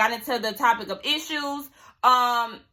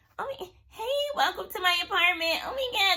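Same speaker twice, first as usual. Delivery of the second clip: put-on cutesy, high-pitched baby-talk voice; 8 semitones higher, 3 dB quieter than usual. Retelling Bree welcoming people to her apartment: Bree's baby voice. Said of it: "that baby voice that she does".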